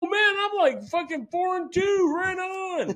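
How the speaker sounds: excited, very high, cheering, gloating tone.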